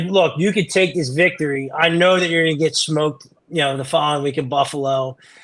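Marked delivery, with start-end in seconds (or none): none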